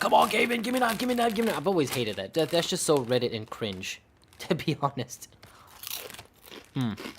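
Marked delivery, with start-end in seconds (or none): 0.0-1.6 high-pitched mock yell. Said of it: "yelling at the screen like".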